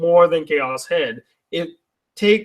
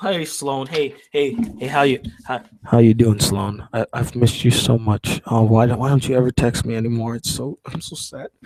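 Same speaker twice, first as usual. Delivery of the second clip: playful, low, creepy voice; 6 semitones lower than usual. Greeting a returning chat viewer named Sloane, acting creepy as a joke. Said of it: "enough of me being creepy".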